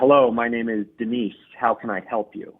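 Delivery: ordinary delivery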